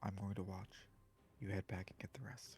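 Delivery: hushed, very quiet, barely audible whisper. Playing a character who stays behind to watch and sends another back: very quiet voice. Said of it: "Doran is going to very quietly say".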